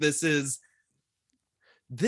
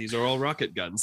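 ordinary talk, nothing marked

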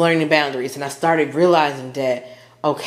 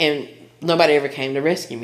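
ordinary talk, nothing marked

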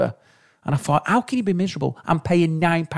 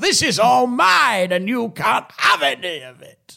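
mock bellowing drunk shout, pitched up, slow; 7 semitones higher than usual. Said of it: "Or just shout".

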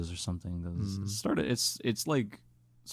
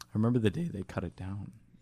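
voice cracking partway through. Repeating a memory when asked to say it again: voice cracking. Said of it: "'cause I heard the voice crack".

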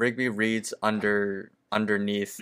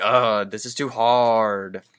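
put-on frustrated groan, louder, slower; 7 dB louder than usual. Recapping a scene where Rigby struggles with a quiz: imitating Rigby's frustrated groan. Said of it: "But then he starts getting frustrated".

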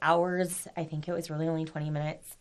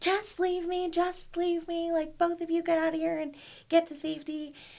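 shrill, very high-pitched, loud yelling; 12 semitones higher than usual. Retelling what their mom yelled at the speaker and their dad: imitating mom yelling. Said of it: "my mom is yelling at both of us".

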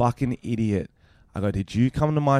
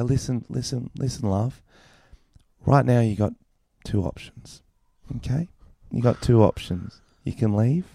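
pandering, condescending, patronizing talking-down manner. Retelling what was said to a rude audience member: retelling a patronizing tone. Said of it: "fully just pandered the fuck out of her".

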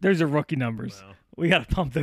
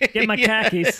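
put-on Boston accent, higher and louder; 7 semitones higher, 4 dB louder than usual. Showing how khakis sounds like car keys: Boston accent. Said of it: "they're the car keys".

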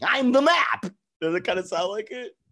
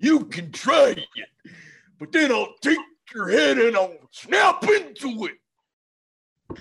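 slow, drawn-out, high-pitched taunting voice; 5 semitones higher than usual. Trading wrestler impressions, replying as Macho Man Randy Savage. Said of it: "if you're gonna do Macho Man Randy Savage".

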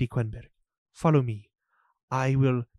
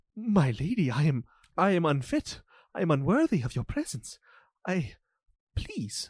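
flustered and embarrassed, much higher pitch; 3 semitones higher than usual. A storyteller voicing a guard who blushes in front of a lady, flustered and blushing. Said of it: "he blushes quite intensely. And he's like".

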